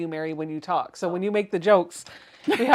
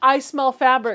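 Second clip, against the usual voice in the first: ordinary delivery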